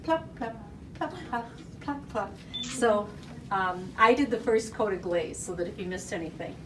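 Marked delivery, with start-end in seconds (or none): 0.0-2.4 put-on teeniest, tiny, soft toddler voice. Retelling how a toddler painted on glaze, in the teeniest little toddler voice. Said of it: "in the teeniest little 18-month-old voice".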